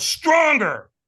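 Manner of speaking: high, loud, demanding call.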